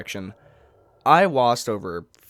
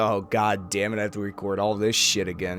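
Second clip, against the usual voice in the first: ordinary delivery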